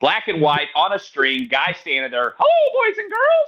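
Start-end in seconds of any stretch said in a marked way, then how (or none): 2.4-3.5 very high little cartoon mouse voice. Describing an old children's TV show host greeting kids, slipping into a Mickey Mouse voice. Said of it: "that's Mickey Mouse".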